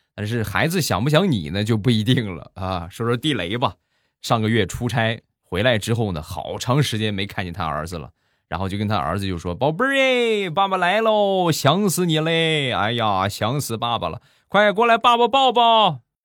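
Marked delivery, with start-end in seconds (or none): 9.6-16.0 very high-pitched hollering call. Retelling a father greeting his son after a trip: imitating a father calling out. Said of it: "刚喊完".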